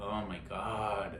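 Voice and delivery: muttered under breath. Retelling a reaction during a quiet part of a movie, seven feet behind him; muttered under breath. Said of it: "I ended up saying like under my breath".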